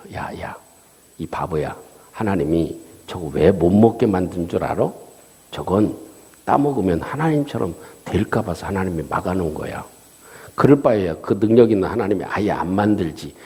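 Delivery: tempting, enticing tone.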